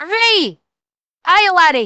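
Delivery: Scottish-accented speech. Trying out different accents, switching to a Scottish accent. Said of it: "I can do a Scottish accent".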